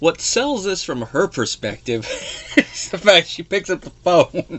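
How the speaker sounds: words broken up by laughter. Recounting a scene, the speaker explains it while laughing. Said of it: "I'm sorry I'm laughing at this".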